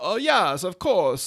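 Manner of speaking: slow, high vampire count drawl. Acting out H. G. Wells answering an interviewer, in a Dracula voice. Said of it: "that sounds like Dracula".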